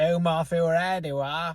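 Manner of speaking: high, loud Welsh accent. Contrasting how people in wales would say it, in a welsh accent. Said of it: "Whereas in Wales, we'd simply say".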